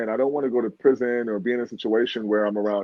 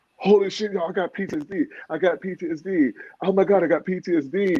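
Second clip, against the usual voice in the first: high, thrilled, over-the-moon excited screaming; 7 semitones higher than usual. Back in the holding bay, the speaker retells screaming to the others: retelling an excited scream. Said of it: "and I was screaming".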